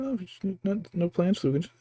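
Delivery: high, fast, sarcastic tone. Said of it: "sarcastically was like".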